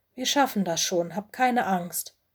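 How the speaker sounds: plain reading voice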